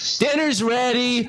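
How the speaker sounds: high, slow, drawn-out yell.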